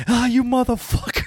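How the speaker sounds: mock yelling. Retelling a scene, the speaker imitates a kid on fire yelling. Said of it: "Nobody knows who he's yelling at".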